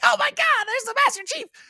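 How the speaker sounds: very high, squeaky, grunting little alien voice. A gamer describes the game's lowly grunt enemies; high-pitched grunt voice. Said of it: "like with the high pitched voice".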